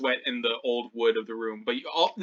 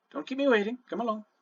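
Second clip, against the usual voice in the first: whisper, much higher; 10 semitones higher than usual. Narrating a scene, the woman at the door ushers both of you in, whispering. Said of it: "she kind of whispers".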